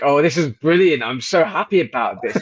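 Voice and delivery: mock-delighted, gleeful laughing speech. Speaker retells how someone reacted to the bodies, imitating gleeful laughing. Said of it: "when Arathon starts like laughing, like".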